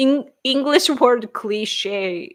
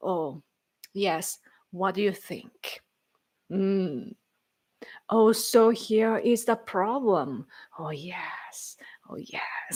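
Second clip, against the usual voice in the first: slow, unhurried, deliberate, drawn-out commentator style; 3 semitones lower, 7 dB quieter than usual. Imitating older hosts on political shows: imitating slow older TV speakers. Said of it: "they speak slowly".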